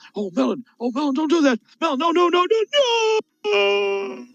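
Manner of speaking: very high, rising, slow, drawn-out shrieking screams. Showing the wrong way to commentate a big moment: demonstrating screaming commentary. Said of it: "you don't scream and you go".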